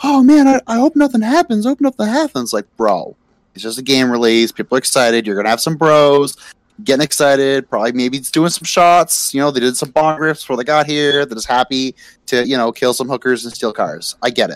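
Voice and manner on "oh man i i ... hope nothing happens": put-on very high, anxious, worried little-boy fretting. Retelling what a boy at a midnight game release said: imitating a worried boy. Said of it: "He's like".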